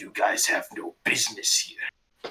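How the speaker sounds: low, breathy, hushed growl. Voicing the Manticore as it speaks to the group, in a snarling Manticore voice. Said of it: "the Manticore kind of snarls a bit and actually speaks to you guys".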